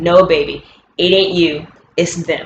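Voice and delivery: ordinary talk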